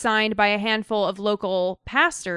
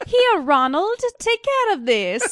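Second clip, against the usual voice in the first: put-on very high voice, vaguely Spanish accent; 10 semitones higher than usual. Playing Hermione Granger handing something over, in a vaguely Spanish accent. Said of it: "What accent was that? That was like Spanish, kind of".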